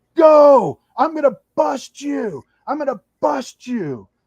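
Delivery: furious yelling, very high and very loud, angry screaming. Acting out someone screaming at the speaker over the radio, retelling an angry scream. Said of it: "he's screaming at me on the on the radio".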